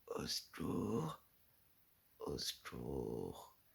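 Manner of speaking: very low, slow, drawn-out, breathless call. Retelling trying to shout for help, the speaker imitates their own breathless voice. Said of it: "Comme si j'avais pas de souffle".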